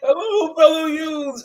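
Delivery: put-on squeaky, very high-pitched old man voice. Acting out a cartoon character who has turned into an old man: voicing an old man. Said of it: "he's like".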